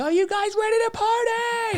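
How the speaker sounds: excited host-style shouting.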